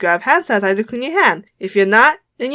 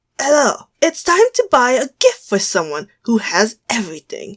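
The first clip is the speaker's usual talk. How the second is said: put-on British London Cockney accent. Asked to say the question in a cockney accent, you go: cockney accent. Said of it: "say it with a Cockney accent then".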